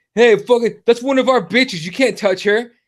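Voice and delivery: put-on rowdy, mildly drunk frat-boy yelling. Retelling how a frat boy outside a party confronted them: imitating a frat boy yelling. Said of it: "starts yelling at us".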